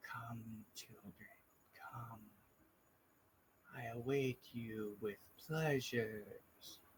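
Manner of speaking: very soft, hushed, rasping voice. Voicing a voice that echoes down a tunnel toward the group, raspy voice. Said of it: "you can hear the like the rasp almost in it".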